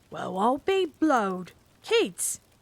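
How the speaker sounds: rough, gruff voice, spoken very slowly. A narrator reads a policeman's line on finding children in the dark, gruff. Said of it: "The gruff voice said again".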